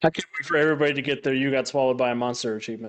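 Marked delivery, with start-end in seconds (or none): none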